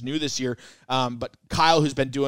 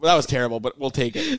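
plain

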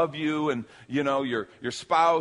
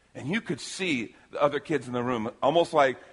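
ordinary talk

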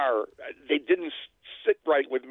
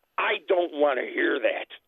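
put-on cold, hostile, aggressive tone. Retelling what a coworker said: imitating a cold, hostile tone. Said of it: "in a very cold, aggressive, hostile way".

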